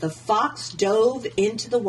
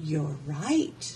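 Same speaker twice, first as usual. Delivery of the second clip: soft, low, hushed half-whisper; 5 semitones lower, 6 dB quieter than usual. A gingerbread girl who has just tied a fox's snout, half-whispering in his ear. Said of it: "she whispered in the fox's ear".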